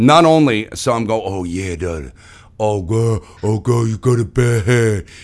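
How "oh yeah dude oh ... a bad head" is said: really thugged-out hip hop voice. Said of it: "Like, really thugged out".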